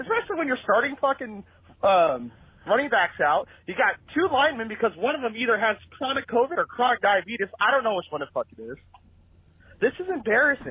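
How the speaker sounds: fuming, exasperated, furious swearing rant. Calling in to rant about a win: furious rant. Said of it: "the most pissed off I've ever been".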